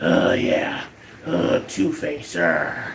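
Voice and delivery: very low, gravelly villain voice. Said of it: "Richard Mall doing this very gravelly voice".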